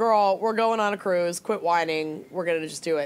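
ordinary talk

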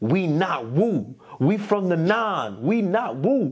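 slow, stretched-out, drawn-out, high-pitched yell. Retelling a story about yelling at friends: imitating someone yelling. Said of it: "I remember yelling at my mans".

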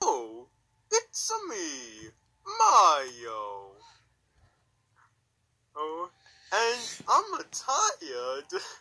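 very high, very loud sing-song, slow and swooping. Pretending to hack into a YouTube channel: Mario impression. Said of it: "actual voice impressions of".

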